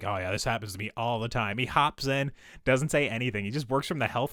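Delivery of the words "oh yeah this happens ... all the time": put-on casual, unbothered voice. Retelling a movie scene about a smashed windshield: imitating Donald Sutherland, unbothered. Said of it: "doesn't even, like, bat an eye".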